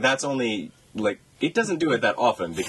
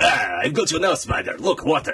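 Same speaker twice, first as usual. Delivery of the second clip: mock Russian accent, villain voice; 6 semitones higher, 3 dB louder than usual. Discussing a villain bantering with the hero, quoting Paul Giamatti's fake Russian accent. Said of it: "Why am I still in fake Russian accent?".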